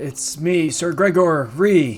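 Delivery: projected call across a distance. Game master voicing a knight calling to the party from far off, calling out. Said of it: "he calls out".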